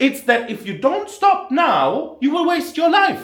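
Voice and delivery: voice climbing to very high pitch, loud. Talking to a listener he calls bro, voice rising higher. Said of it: "my voice goes higher".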